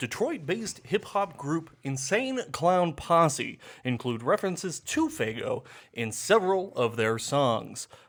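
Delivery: put-on radio announcer style reading. Reading what Google brought up about a drink, in a put-on announcer voice. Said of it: "I'll do this in my announcer voice".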